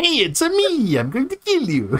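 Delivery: very high character voice with big swooping pitch. Reading a chat comment about assassins dressed as Mario: Mario voice. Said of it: "they're dressed as Mario".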